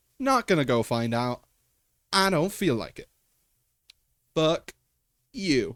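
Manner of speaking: sassy, cheeky, dismissive tone. While playing a game, sassy. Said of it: "I don't know why I'm being sassy".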